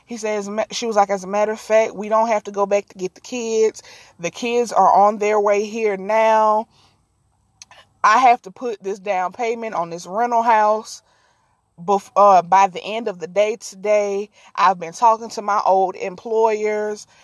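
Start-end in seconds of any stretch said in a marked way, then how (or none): none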